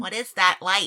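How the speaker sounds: loud put-on burrowing mole creature voice. Acting out a mole coming out of its hole, in a mole voice. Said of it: "That's my mole voice".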